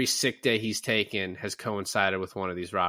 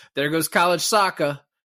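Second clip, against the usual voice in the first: attempted tough-guy Boston accent, loud and pitched up; 7 semitones higher, 7 dB louder than usual. Retelling a scene, quoting Jeremy Renner's line in an attempted Boston accent. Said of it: "Is that your attempt at a Boston accent?".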